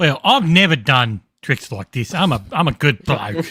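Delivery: very heavy Cockney London accent. Answering a question about Halloween tricks as John: very Cockney accent. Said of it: "that's a very Cockney".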